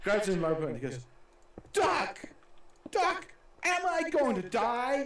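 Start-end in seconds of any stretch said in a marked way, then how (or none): 1.7-5.1 put-on American accent, high and slow. Retelling a corporal grabbing the doctor by the lapels, put-on American accent. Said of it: "this is so American".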